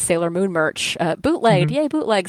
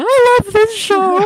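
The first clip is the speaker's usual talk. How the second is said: put-on overwhelmed sobbing, very high, loud bawling; 5 dB louder than usual. Recalling a climactic Sailor Moon episode, retelling bawling. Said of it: "I'm like bawling".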